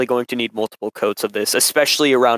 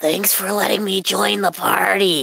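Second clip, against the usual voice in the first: whispered put-on character voice, higher; 9 semitones higher than usual. Showing how someone did the voice in a whisper: whispered Funtime Freddy voice. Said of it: "how do you do Funtime Freddy's voice, but in a whisper".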